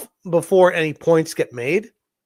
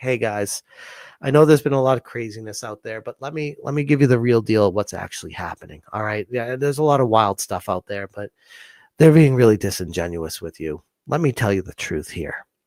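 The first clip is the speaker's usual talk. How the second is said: low, calm, collected condescending voice; 8 semitones lower, 4 dB quieter than usual. Mocking a man who talks down to viewers, in a mock calm, condescending voice. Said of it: "the calm, collected voice".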